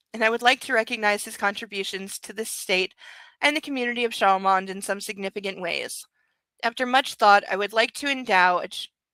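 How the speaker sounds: ordinary delivery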